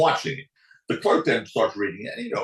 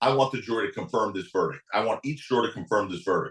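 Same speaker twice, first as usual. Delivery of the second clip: ordinary talk, nothing marked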